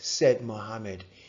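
ordinary delivery

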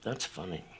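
mock icy, very cold, unamused delivery. Retelling how a writer reacted to a pitched joke: imitating a very cold delivery. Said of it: "sits back and he says very, very coldly".

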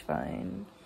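fun leaned on hard, strongly stressed. Recounting Cinco de Mayo with friends to viewers, emphasis on fun. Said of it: "Emphasis on fun".

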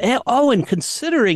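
mock sorry-for-you sympathetic tone, high and pitying. Retelling how a woman reacted to a supposed hearing aid: imitating a pitying tone.

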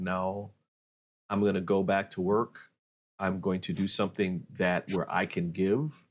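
ordinary talk

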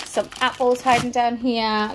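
ordinary delivery

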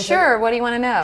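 easygoing, chatty, put-on American accent. Asked to let them hear her American accent, the speaker replies in an American accent. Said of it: "can we hear your American accent".

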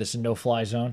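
ordinary talk

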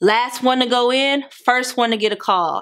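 ordinary talk

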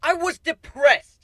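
shrill, very loud, very high defensive outburst. Narrator reads Warren answering Kuno's question, speaking defensively. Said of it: "Warren said defensively".

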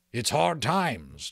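sullen, sulky. A freebooter answers a complaint about the small take, sullen. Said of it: "Jack Jingley answered sullenly".

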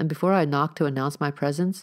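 plain

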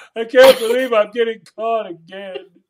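loud, high, fake blubbering, sobbing bawling. Picturing a fish with a hook through its face, the speaker voices it: mock bawling. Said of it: "starts bawling going".

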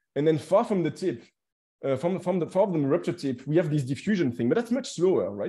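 ordinary talk, nothing marked

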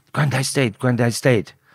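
mock, light, mild screaming cry. Recalling a daughter's phone call with bad news, imitating Jodie screaming. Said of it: "like screaming down the phone".

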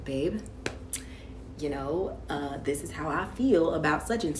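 even, calm, soft reasonable tone. Explaining how they never yell in disagreements with their partner: retelling their calm voice. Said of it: "in a calm voice".

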